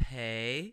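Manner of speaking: rising second tone on pei, pitch sliding upward. Teaching the tones of a three-syllable phrase, saying pei with a rising tone. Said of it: "which is like the second one. It goes up".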